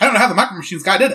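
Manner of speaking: high, rattled-off, rapid-fire fast talk. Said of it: "talking this fast".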